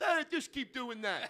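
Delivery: dumb-sounding voice, loud and high. Acting out God answering the people's question: dumb voice for God. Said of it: "I have to give him a dumb voice".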